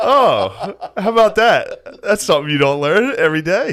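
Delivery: high, slow, faux-innocent wonder, feigned surprise. Retelling answering a sex ed teacher as a fifth grader: imitating own feigned innocent surprise. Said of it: "stay in character".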